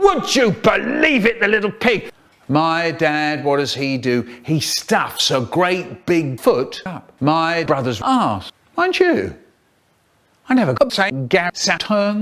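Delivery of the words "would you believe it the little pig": loud roaring, furious bellowing outburst. Telling a family story, the speaker acts out his dad roaring: retelling a roar. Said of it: "he's roaring".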